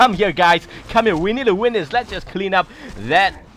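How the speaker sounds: loud mock rallying shout, called out. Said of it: "Emperor shouting".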